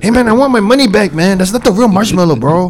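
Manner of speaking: Mexican-American English accent. Speaker acts out an ese upset about a marshmallow: ese voice. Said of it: "you watch too many Mexican".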